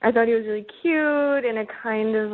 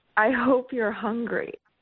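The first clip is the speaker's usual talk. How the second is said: put-on whisper. Retelling what he whispered in the bedroom: imitating a whisper. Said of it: "he just whispered to me".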